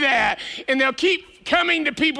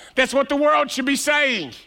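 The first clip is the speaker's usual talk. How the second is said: ordinary delivery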